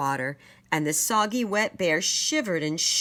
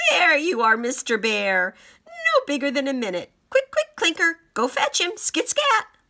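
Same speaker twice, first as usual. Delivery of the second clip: high, swooping, sing-song cackle; 7 semitones higher, 4 dB louder than usual. Reading the story, the narrator voices Roxy as she spots the bear: cackling Roxy voice. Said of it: "she cackled".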